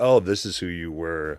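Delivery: ordinary talk, nothing marked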